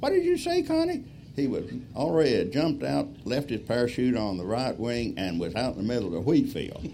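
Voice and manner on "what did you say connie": tiny, very high-pitched little voice. Retelling a smoking plane, Vince answers from the wheat field: Vince's little bitty voice. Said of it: "in a little bitty voice".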